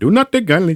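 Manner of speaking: stock put-on Indian accent. Doing the voice a co-speaker asked for, in a stereotypical indian accent. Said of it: "just think stereotypical Indian accent".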